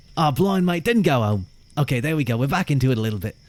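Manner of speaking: laid-on Australian accent, slipping into British. Speaker tries to channel their inner Steve Irwin: Steve Irwin impression. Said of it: "I'm trying to channel my inner Steve Irwin".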